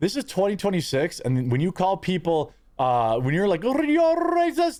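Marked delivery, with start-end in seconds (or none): 3.6-4.8 mocking, put-on botched Greek accent, higher. Imitating people who call others racist: mocking impression of accusers. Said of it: "The fuck was that impression?".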